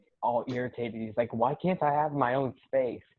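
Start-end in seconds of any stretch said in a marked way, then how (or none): none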